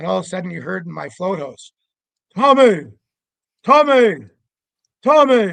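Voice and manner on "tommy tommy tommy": put-on calling out very loudly in an Indian accent. Retelling a voice heard in his float house calling his name, in an indian accent. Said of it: "like an Indian accent saying my name".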